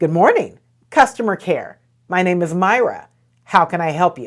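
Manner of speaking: friendly, smiling customer-care voice. Demonstrating a customer care greeting, with a smile in your voice. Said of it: "with a smile in your voice".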